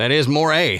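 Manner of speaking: imitated Canadian accent. Echoing the quote of a woman with a sudden Canadian accent: imitating a Canadian accent. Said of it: "started speaking with a Canadian-like accent".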